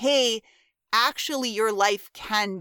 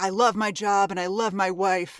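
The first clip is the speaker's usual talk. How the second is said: man's voice, put on. Discussing a TV scene, quoting O'Reilly's line: O'Reilly in a man voice. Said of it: "this is my man voice".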